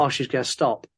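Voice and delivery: plain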